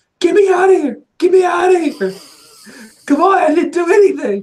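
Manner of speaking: very high, shrill, loud screaming. Narrating the scene to the players, voicing Kanan screaming out there. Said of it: "Kanan out there screaming like".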